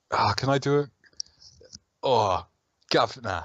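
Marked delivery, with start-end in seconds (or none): 2.0-3.4 put-on Cockney accent. Asked to do a Cockney accent quickly, answering in a put-on Cockney accent. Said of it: "this is probably my best Cockney accent".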